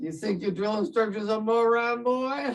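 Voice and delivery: put-on drill-sergeant style Southern accent. Retelling what the drill sergeant asked: Southern accent imitating Sergeant McCall. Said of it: "in his beautiful Southern accent".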